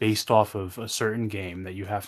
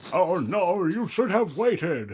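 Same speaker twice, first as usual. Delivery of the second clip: very high, slow character voice; 10 semitones higher than usual. Trying a voice another speaker wished for: attempted Gandalf voice. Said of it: "that sounds more like Sig-, Sigmire of Katarina".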